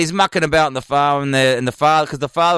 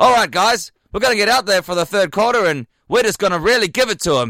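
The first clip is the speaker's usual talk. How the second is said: offhand, shrugging, nonchalant tone, pitched up; 6 semitones higher than usual. Retelling the worst coach's speech before the third quarter: imitating a nonchalant coach speech. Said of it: "delivered so nonchalantly".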